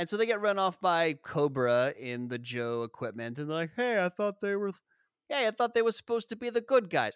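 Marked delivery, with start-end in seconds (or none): 3.8-7.2 put-on fast, pitched-up New Jersey accent. Retelling people's reaction when Cobra attacks, in a Jersey accent. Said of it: "basically that accent".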